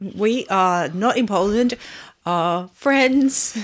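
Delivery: trembling, wobbling voice with slow delivery. Podcast co-host opening the episode, shaky voice. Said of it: "Why does my voice sound shaky?".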